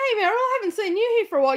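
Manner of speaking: quick, high, mock-friendly sarcastic voice. Retelling greeting Meryl after not seeing her for a while, retelling a sarcastic greeting. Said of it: "you can hear the sarcasm in my voice".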